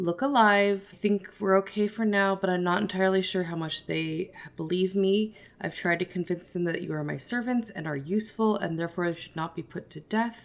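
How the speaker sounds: steady, calm, reassuring, commanding in-charge voice. Playing Bonnie answering a companion's worried question, in a calm in-charge voice. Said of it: "very calm, very much like, this is, I am in charge".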